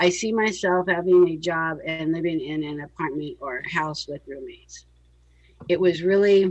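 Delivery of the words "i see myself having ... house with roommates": low, level, flat, unemotional monotone. Reenacting how you answered the five-years question, imitating a flat monotone answer. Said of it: "I actually have it down monotone. ... you answer it like this".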